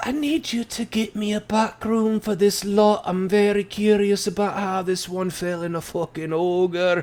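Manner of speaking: partly whispered voice. Voicing a dwarf who asks a barmaid for a back room: half-whispering in Dwarven. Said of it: "he whispers in Dwarven".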